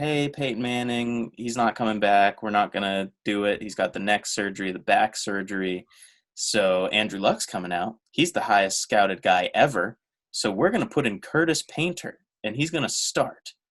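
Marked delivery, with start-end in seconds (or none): none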